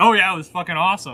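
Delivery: high, sarcastic, mocking gush of fake enthusiasm. Imitating a workout partner's reaction after a good workout: imitating sarcastic praise. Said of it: "and then he'll be like".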